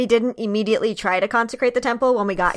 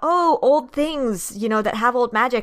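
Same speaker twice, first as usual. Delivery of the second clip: ordinary talk, nothing marked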